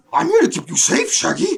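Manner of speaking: put-on cartoon dog voice. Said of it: "You are doing the voice".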